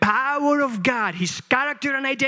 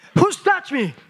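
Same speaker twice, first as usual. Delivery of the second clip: high-pitched, gospel-style, biblical preaching delivery; 8 semitones higher than usual. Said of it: "in Jesus' style".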